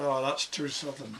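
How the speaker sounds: usual speaking voice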